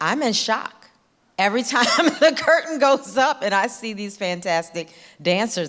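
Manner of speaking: laughing through words, high and loud. Talking about the job and the whole concert, laughing.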